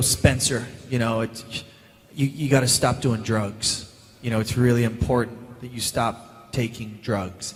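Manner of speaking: put-on low, slow American accent. Retelling a first day on set, delivering a scene line in an American accent. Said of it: "I had to do an American accent".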